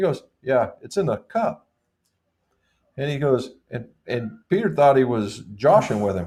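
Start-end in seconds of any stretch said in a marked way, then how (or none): 0.4-1.7 casual, nonchalant, offhand tone. Retelling a golf partner saying the ball is in the cup: imitating Bob's nonchalant tone. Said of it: "in the most nonchalant method".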